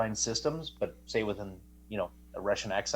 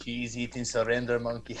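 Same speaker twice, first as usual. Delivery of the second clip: put-on accent, somewhat German. Repeating a quoted insult in a mock voice: put-on accent, kind of German. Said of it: "I don't even know what accent I'm doing now".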